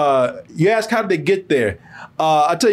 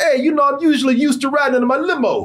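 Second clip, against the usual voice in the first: put-on Jersey Italian accent, pitched up; 7 semitones higher than usual. Speaker acting out a character's line from a scene being described, jersey italian guy accent. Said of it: "talking like a Jersey Italian guy".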